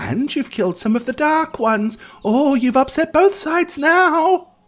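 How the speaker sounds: very high, curious, inquisitive fox-spirit voice. Voicing a kitsune sneaking up on resting travelers: inquisitive kitsune voice. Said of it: "it's the kitsune".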